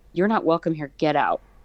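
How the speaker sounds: mock hostile, aggressive delivery. Retelling ordering a presence out of a room: retelling an aggressive command. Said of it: "really aggressively".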